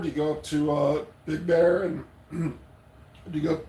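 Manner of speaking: voice cracking and breaking on the words. In conversation, asking someone a question, voice cracking. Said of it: "my voice is cracking".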